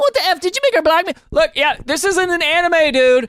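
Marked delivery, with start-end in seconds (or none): 0.0-1.1 frantic, high, rushed panic-fueled outburst. Acting out another person's reply in a mock-panicked voice. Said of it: "Panic-fueled voice".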